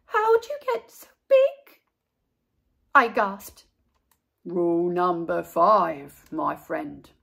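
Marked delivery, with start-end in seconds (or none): 4.4-6.9 very low, rough monster growl. Narrator reads Gabe the monster answering the child in bed; growly Gabe monster voice. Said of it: "[name] was definitely not gone. He was right there, and he was huge. I charged into my room and slammed the door. When I leaped into bed, I knew my toes were safe. Whew. I was surprised to hear breathing ... [name] growled".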